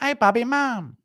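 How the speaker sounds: voice pitched way up, very high. Announce the impression, then call out to Bobby: impression of Bobby Lee's mum. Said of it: "Impression of Bobby Lee's mum".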